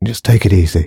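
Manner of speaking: hushed whisper. The commanding soldier speaks to Alex as his men lower their guns, whispered. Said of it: "he whispered to Alex".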